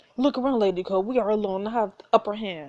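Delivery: ordinary delivery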